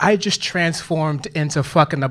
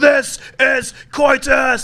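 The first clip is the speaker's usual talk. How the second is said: very high, warrior-like battle cry; 10 semitones higher, 4 dB louder than usual. Picturing kicking her onto the bed and shouting: King Leonidas battle cry. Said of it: "I walk in like I am King Leonidas".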